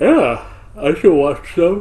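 words stretched through a yawn. Listener answers a friend's offer to send some videos, yawning while speaking. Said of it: "You say it as you're yawning".

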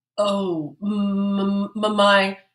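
faltering, stammered words. Mayor Moe, caught out by Officer Bluestein, answers stammering. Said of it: "stammered Mayor Moe".

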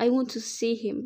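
ordinary delivery

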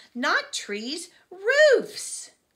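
urgent, very loud, high near-shout. Lena tries to stop the teacher from writing on the board; almost shouting. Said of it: "She almost shouted".

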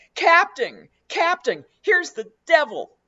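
shrill, very high, very loud shouting. A bumpkin runs toward the captain, yelling. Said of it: "yelled the bumpkin".

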